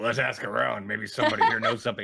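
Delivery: rough, smoke-worn, raspy ghoulish smoker's voice. Repeating a fellow player's character line back to him, ghoul impression. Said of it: "That's my ghoulie impression".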